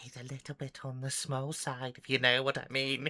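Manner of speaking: sighing, said on a sigh. Voicing a woman who turns to a player: sighing in character. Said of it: "she turns and looks at you and sighed".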